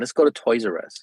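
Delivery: ordinary talk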